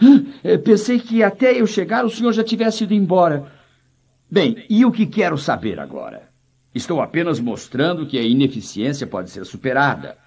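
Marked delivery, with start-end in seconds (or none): 0.0-3.5 mock breathless, panting, pitched-up gasping words. Retelling what a lady said after running up the hill: imitating someone out of breath. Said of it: "Ela chegou ofegante e disse".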